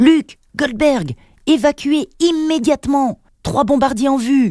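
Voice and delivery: very high, urgent, alarmed yell. Narrator reads a character warning two teammates to evacuate, shouted warning. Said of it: "cria Didier".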